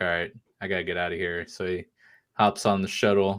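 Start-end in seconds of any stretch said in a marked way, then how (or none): 0.0-1.5 put-on glum, dejected, mopey sad voice. Retelling a scene where he must leave: imitating sad Mando. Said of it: "he's sad Mando now".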